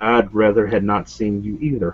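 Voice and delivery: low, under-the-breath mutter. Voicing a character who mutters a line: speaking under his breath. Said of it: "you hear Dakota speak under his breath".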